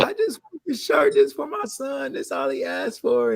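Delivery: high, swooping, tearful pleading through crying. Retelling a customer's call about a forgotten shirt order: imitating someone crying. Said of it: "and just was really crying".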